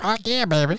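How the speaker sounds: put-on, high-pitched cartoon creature voice. Joking with friends about a cartoon, doing the Hormone Monster voice. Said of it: "I can't even do that voice".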